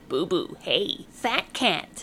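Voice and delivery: croaking, croaky calling voice. In a story, a voice calls out to the cat Boo Boo, croaky calling voice. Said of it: "called a croaky voice".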